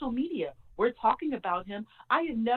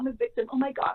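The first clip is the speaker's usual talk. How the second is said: tearful, weepy, crying, self-pitying victim voice; 3 semitones higher than usual. Mocking how Tati plays the victim: imitating Tati's tearful victim act. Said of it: "And all those tears and crying".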